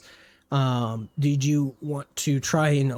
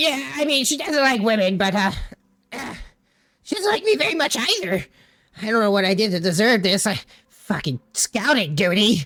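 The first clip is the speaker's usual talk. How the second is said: high-pitched, griping, goblin-like creature voice; 7 semitones higher than usual. Speaker describes the voices a listener hears, doing a goblin-y voice. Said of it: "a kind of goblin-y kind of voice".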